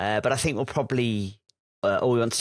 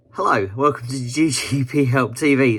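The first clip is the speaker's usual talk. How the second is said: loud, very slow speech through laughter; 3 semitones higher, 6 dB louder than usual. Opening the show, the host greets viewers, laughing while talking. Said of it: "I'm laughing because this is just".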